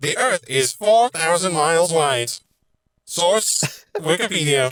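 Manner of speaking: fake computer-speak, loud, high robotic voice. Asked to put a bit of an AI accent on, put-on AI accent. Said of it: "Put a bit of an A I accent on".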